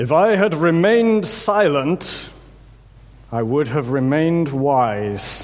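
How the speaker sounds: play-acted, drawn-out, booming strict teacher voice. Quoting a teacher trying to quieten the classroom: teacher's booming voice. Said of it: "in a really sort of booming voice".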